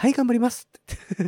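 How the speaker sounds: gentle, tender, mild put-on voice. Showing how a person should answer, in a soft, slightly high voice. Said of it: "柔らかいちょっと高めの声で".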